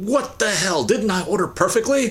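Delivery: acted-out very high, exasperated, indignant rant. Telling a joke, the speaker acts out a man getting mad at the cashier. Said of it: "he gets all mad".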